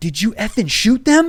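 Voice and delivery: furious high-pitched shouting.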